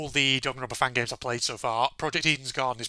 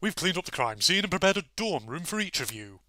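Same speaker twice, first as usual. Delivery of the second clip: put-on slightly odd, eccentric, plummy posh accent; 4 semitones higher than usual. Voicing Tozu in a Danganronpa game, telling the students about dorm rooms: Tozu's eccentric posh accent. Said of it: "a slightly more eccentric posh accent".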